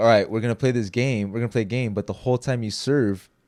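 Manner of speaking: ordinary talk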